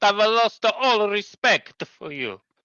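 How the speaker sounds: imitated Italian accent. Quoting a man's remark about Russell, imitating an Italian accent. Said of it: "he actually said it in an Italian accent".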